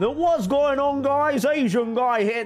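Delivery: terrible put-on British accent. Imitating a joker whose audience loves his accent, in a terrible British accent. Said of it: "He always does this terrible British accent".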